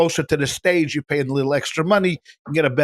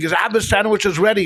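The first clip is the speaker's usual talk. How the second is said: put-on yelling, higher; 5 semitones higher than usual. Retelling a lost sandwich order at a bagel counter, imitating someone screaming. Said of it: "The guy screaming".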